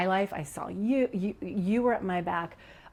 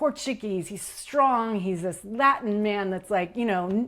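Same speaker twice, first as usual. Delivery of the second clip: ordinary delivery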